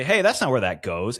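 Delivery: play-acted, easy, lighthearted playful teasing. Retelling what the speaker said to a woman who lost her mind, retold playful tone. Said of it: "And in that tone".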